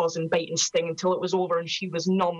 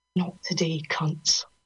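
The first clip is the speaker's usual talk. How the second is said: loud theatrical whisper. Reading a story, a character grabs him and answers, whispered. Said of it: "whispers over the noise".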